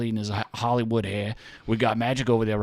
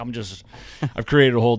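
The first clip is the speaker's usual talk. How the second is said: ordinary talk, nothing marked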